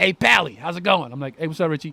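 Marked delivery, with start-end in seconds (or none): 0.0-1.1 put-on old Irish man's voice in a thick Irish brogue. Retelling a phone call, the speaker imitates his manager: imitating Richie, old Irish guy. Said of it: "old Irish guy".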